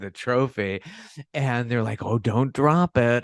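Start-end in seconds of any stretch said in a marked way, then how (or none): 2.0-3.2 mock snide commentator voice, loud and drawn-out. Retelling a comment made to the winner holding the trophy: imitating snarky commentary. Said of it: "it's so snarky".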